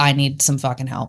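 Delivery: ordinary delivery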